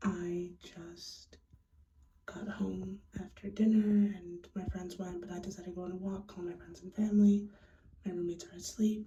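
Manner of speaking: speaking really quietly, hushed. Talking late at night while roommates are asleep: speaking really quietly. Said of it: "I'm speaking really quietly".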